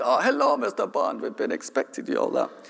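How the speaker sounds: terrible fake European accent, very high, swooping. Speaker acts out party hosts greeting a guest in a terrible European accent. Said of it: "putting on a terrible European accent".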